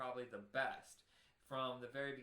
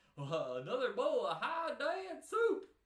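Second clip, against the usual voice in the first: very high, loud, swooping cartoon voice; 11 semitones higher, 11 dB louder than usual. Talking about doing Disney voices, trying a line from the Goofy movie; Goofy impression. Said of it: "from the the Goofy movie where he goes".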